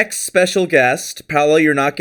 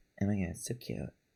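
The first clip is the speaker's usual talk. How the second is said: very soft, very quiet, low mutter under breath; 7 semitones lower, 20 dB quieter than usual. Retelling copying a friend's voice at a picnic: imitating own under-breath copy of a little voice. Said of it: "under my breath, just went".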